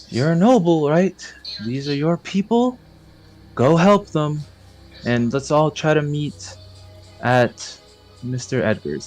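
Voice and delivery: hushed, voiced half-whisper, kept close. A character half-whispers this into Fate's ear, half-whispering. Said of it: "he whispers this in in Fate's ear".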